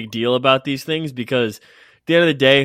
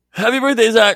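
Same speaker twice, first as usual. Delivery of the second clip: loud, very high, all on one outbreath; 11 semitones higher, 6 dB louder than usual. Re-enacting an earlier birthday wish: re-enacting a line said on one exhale. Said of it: "it was like I was exhaling out".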